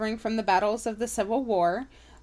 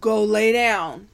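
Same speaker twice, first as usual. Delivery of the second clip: motherly voice, louder; 8 dB louder than usual. Telling Hemi to back up and lie down: mom voice. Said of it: "Had to break out the mom voice".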